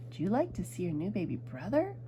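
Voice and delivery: ordinary talk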